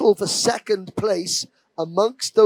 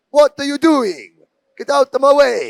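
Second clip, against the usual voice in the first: loud, terrible, fake, put-on Italian accent; 5 semitones higher, 6 dB louder than usual. Race commentator voicing a driver's displeasure at a newbie: terrible Italian accent impression. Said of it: "terrible impression".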